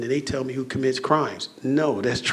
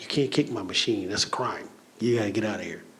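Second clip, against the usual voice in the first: laying-down-the-law cop manner; 4 semitones lower, 4 dB quieter than usual. Retelling ordering a man away from the vending machine, with cop mentality. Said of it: "but I got cop mentality".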